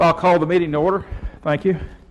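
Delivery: breathless, winded, gulping air. Chair opens a committee meeting after running there, out of breath. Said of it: "Let me catch my breath".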